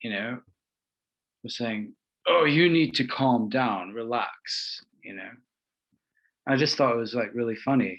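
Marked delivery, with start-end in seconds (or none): 2.3-4.8 mock tense, controlling, slow, angsty calm tone. Retelling what a former friend said to calm the speaker: imitating an angsty tone. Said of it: "he said it in a really angsty way".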